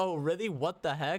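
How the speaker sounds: plain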